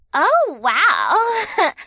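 surprised gasp, high and loud. Becca glances up and sees the narrator undressed: gasping in surprise. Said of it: "She gasped".

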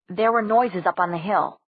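usual speaking voice

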